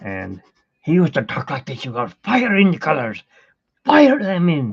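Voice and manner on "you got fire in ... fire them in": put-on cranky old man, German accent, pitched up, loud. Speaker recalls a TV oil-painting teacher, doing a grumpy old German William Alexander impression. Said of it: "He was German and old and grumpy sounding".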